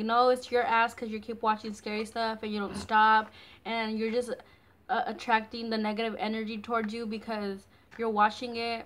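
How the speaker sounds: ordinary delivery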